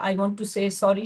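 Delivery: ordinary delivery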